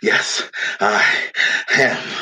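panted speech. Bambosi, beyond fatigue, answers the crowd's taunt; panted reply. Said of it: "he panted".

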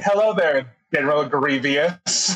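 ordinary talk

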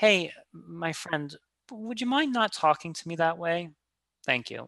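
even, polite, calm tone without anger. Demonstrating how to answer someone disrespecting you, saying it calmly with no anger. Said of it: "you say it in just that tone, there's no anger".

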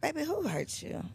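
soft, gentle, welcoming, comforting high feminine voice. Showing how to comfort him with his head on her lap, comforting feminine tone. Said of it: "feminine tone, comforting tone".

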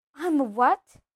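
gasping. Narrator reads a boy just told he is a wizard, gasped. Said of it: "gasped Harry".

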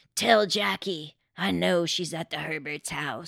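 menacing, ominous, rasping put-on voice. Narrating a call to Jacqueline's mother, speaker does a put-on ominous rasping voice. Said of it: "an ominous voice rasping out".

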